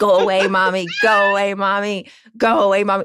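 mock, insistent, repeated little kid's yelling. A parent retells her daughter yelling at her at nap time, imitating a toddler yelling. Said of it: "she's just yelling at me".

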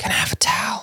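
sneaky, very quiet, barely-there voice. Retelling how Kyrie sneaks up to the bed: imitating Kyrie asking very quietly. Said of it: "intentionally really quietly".

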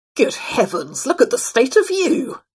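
stern, high, swooping squawk like a swan. Narrating a sternly voiced swan interrupting a wandering traveler: stern squawking swan. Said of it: "he squawked".

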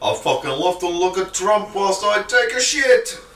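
slow, loud, very high put-on Russian accent. Joking about looking at Trump on the toilet: Russian accent. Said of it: "Why you say that in a Russian accent".

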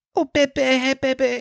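put-on drawn-out cooing baby talk, very high and slow. Recounting calling out for Georgie, the speaker is retelling baby talk to Georgie. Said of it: "Fucking disgusting behavior".

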